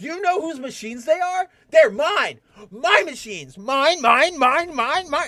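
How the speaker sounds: play-acted very high, loud, shrill fit of temper. Retelling a Scrubs scene where the MRI guy refuses: imitating a tantrum. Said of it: "throws a tantrum".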